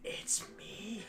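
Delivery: very soft, hushed, breathy whisper. A visitor dropping by announces who it is, whispered. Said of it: "Like the whispered, it's me".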